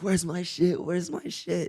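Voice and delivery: frantic, high-pitched voice. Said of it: "they're like".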